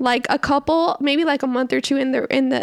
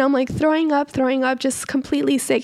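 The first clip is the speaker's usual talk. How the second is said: normal talking voice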